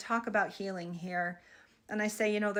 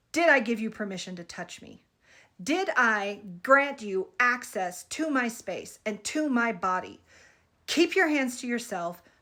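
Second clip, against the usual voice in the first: stern, grounded, furious, raised voice; 5 dB louder than usual. Retelling confronting someone who touched you, say it with all the fury you can muster. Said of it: "with all the fury I can muster".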